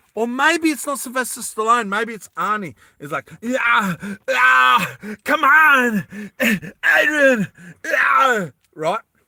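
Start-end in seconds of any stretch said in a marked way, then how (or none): 3.4-8.9 loud, strained, slow, drawn-out bellowing shout. Retelling a movie scene, the speaker does it as Arnie: strained Arnie impression. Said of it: "that made me lose my voice".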